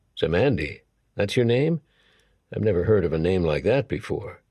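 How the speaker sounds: plain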